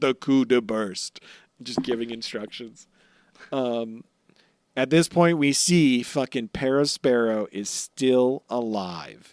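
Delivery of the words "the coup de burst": imitated robotic recorded voice. Retelling a recorded message of instructions: robotic voice.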